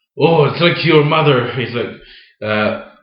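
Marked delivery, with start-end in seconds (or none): 0.2-1.5 attempted put-on Irish accent. Retelling how a fellow performer said a line at practice: imitating an Irish accent. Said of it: "trying to do it in an Irish accent".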